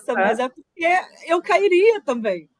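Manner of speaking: talking through laughter. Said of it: "eu tô rindo da sua desgraça".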